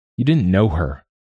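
on the defensive. Toke answers Albert about a woman Albert never knew, defensive. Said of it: "Toke said defensively".

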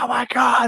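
put-on very high, frightened shriek. Retelling a little sister running in scared from the TV: imitating a frightened scream. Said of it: "she comes screaming through".

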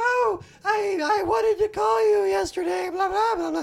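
shrill, very high, loud ditzy woman voice, sketch-comedy style. Retelling a phone call in a movie: sketch comedy impression of a woman. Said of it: "a man doing a sketch comedy impression of a woman".

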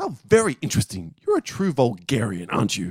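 erudite English voice with swooping, widely swinging pitch. Answering a demand for an apology in the acted scene: John Cleese as Archie, English and erudite. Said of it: "[name] will play John Cleese, Archie".

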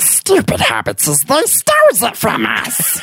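very high, swooping creature voice. Joking about a realm where people eat second breakfast: Gollum voice. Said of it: "Wow, [name], that was pretty good".

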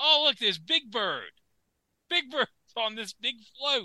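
soft, high voice. Commenting on parade floats, doing a Kermit the Frog voice. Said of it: "it's me, Kermit the Frog here".

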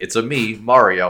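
very slow, flat, level monotone drone. Telling a listener how Mario sounds in the movie, do it in a Chris Pratt voice. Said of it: "in his really Chris Pratt voice".

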